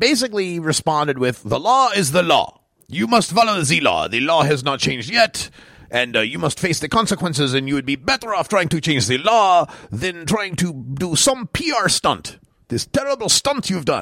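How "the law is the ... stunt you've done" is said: bad, clumsy put-on French accent. Quoting the mayor of Montreal's tweets, in a lousy French accent. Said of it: "lousy French accent".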